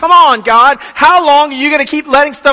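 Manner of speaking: acted-out exasperation. Imagining David's complaint to God, acting out a mock-exasperated plea. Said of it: "up to here with it".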